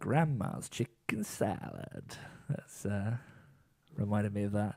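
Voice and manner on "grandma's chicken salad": sultry, alluring delivery. Recalling a Friends bit, the speaker does Joey saying a line, Joey's sexy voice. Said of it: "Joey can make anything sound sexy".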